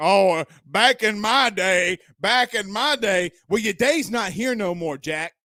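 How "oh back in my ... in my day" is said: slow, mocking, put-on old-man voice. Speaker mocking someone as an old man on a porch swing, mocking old man voice. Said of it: "like the old man sitting on".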